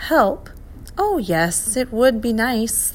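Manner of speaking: absent-minded, distracted, half attending. A creature answers a professor who asks for help, absent-minded. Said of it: "the creature replied absently".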